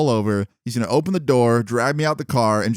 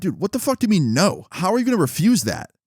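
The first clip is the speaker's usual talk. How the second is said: mock mad, disbelieving and angry, pitched up; 8 semitones higher than usual. Retelling arguing with a driver who refuses to stop: retelling getting mad. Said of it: "I start getting kinda mad".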